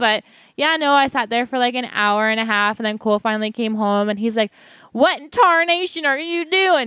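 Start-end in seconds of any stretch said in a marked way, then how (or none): 4.9-6.9 put-on Southern accent, higher and slower. Retelling what Cole said on finally coming home, in Cole's 1960s Southern accent. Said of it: "I love that accent you always give Cole".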